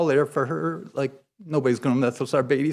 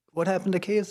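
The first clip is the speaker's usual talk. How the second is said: surprised, startled, taken aback; 3 semitones higher, 3 dB quieter than usual. Speaker recalls first seeing pictures of a boy who had grown, retelling own surprised question. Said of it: "and I was like".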